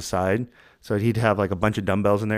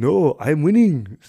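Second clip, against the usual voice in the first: put-on Austrian accent, higher and slower; 6 semitones higher, 6 dB louder than usual. Retelling how a man answered men yelling at him, in his Austrian accent. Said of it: "in his whatever Austrian accent".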